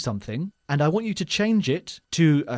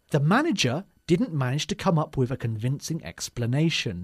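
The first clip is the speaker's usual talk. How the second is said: ordinary talk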